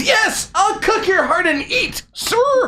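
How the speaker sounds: very high, cracking, screaming shriek.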